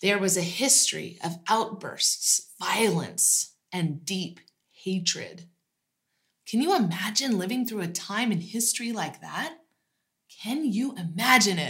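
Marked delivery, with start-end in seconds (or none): 6.5-11.7 thick, knowing, heavy, dripping sarcasm. Asking listeners to imagine living through hateful times: dripping with sarcasm. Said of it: "I hope you hear my voice dripping with sarcasm".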